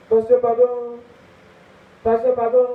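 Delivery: begging cry, high and loud.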